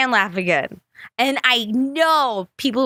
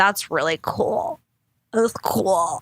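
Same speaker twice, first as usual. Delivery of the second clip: weird put-on tongue-out "cool", lower, much slower; 3 semitones lower than usual. Recalling how your mom thought she was being cool, imitating her weird tongue-out "cool". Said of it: "she'd always like say cool really weird... Like she'd stick out her tongue".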